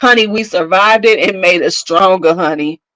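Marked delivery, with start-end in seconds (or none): none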